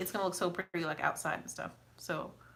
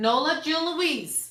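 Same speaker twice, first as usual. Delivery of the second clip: loud, high-pitched yell; 8 semitones higher, 6 dB louder than usual. Speaker calling for Nola June Louise, who isn't listening: yelling. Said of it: "I'm yelling at y'all".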